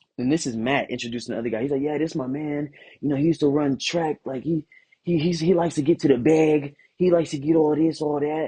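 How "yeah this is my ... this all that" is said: put-on heavy New York accent. Retelling how a man introduced another guy to him, imitating Matt's New York accent. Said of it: "has a heavy New York accent".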